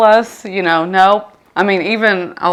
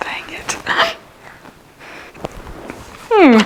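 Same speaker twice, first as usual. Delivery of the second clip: choked-up, near tears, fighting back tears; 12 semitones higher, 3 dB quieter than usual. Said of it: "I'm not gonna cry on this".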